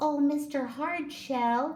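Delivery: tiny high-pitched voice. Reading a story, the narrator voices a stranded ant calling to a turtle, in a wee small voice. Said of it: "called the ant in his wee small voice".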